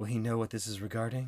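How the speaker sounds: put-on sultry voice. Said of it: "starts doing a very sexy".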